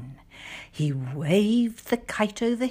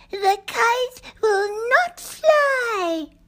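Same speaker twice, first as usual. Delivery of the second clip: very high, loud, slow, teasing little bird voice; 5 dB louder than usual. Reading a Frog and Toad story, three robins in a bush speak to Toad: robins' voice. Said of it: "Three robins were sitting in a bush".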